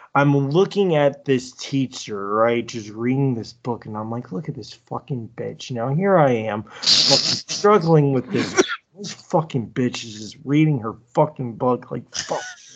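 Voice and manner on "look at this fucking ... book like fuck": mock mumbling, muttering under breath. Speaker recalls watching a summer math teacher read a book, retelling muttering under breath. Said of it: "I was mumbling so hard under my breath".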